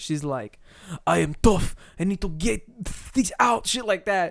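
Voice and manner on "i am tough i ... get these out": thick, heavy, put-on Russian accent, laid on thick. Retelling what a woman said before punching a bag, in a thick Russian accent. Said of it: "still talking in a thick Russian accent".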